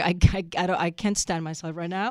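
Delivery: ordinary delivery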